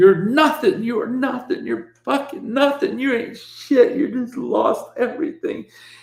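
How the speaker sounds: sobbing, crying, pitched very high. Retelling a moment on the toilet, the speaker acts out crying self-talk. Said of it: "And I'm crying, and I'm going".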